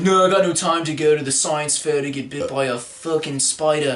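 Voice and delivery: mock Australian accent in a hipster style.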